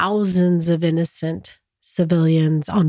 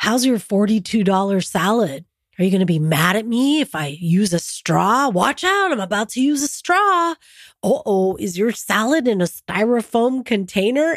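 taunting, mocking, sing-song sarcasm; 3 semitones higher than usual. Retelling a man who made fun of the speaker, mimicking sarcastic mockery. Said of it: "he said he was trying to be sarcastic".

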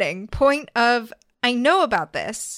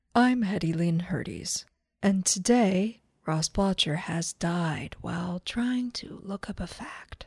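put-on public radio announcer delivery; 4 semitones lower, 7 dB quieter than usual. Taking over the recording as a mock podcast host: NPR voice. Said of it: "This is my NPR voice".

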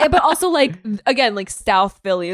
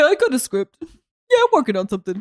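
clumsy tough-guy cartoon bear voice; 4 semitones higher than usual. Speaker acts out Stallone's words to the other speaker: bad Sylvester Stallone impression. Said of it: "That's a bad one. I sound like a bear".

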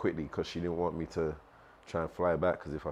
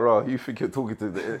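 put-on Igbo-accented speech; 5 semitones higher, 7 dB louder than usual. Retelling a phone argument, the speaker quotes the other person in a put-on Igbo accent. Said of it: "In an Igbo accent".

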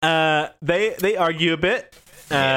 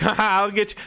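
high, swaggering, cocky, fake-tough taunting bravado; 7 semitones higher than usual. Imitating characters who posture while getting beaten: imitating posturing bravado. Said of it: "they're posturing a bit".

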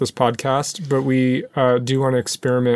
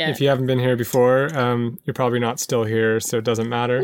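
plain

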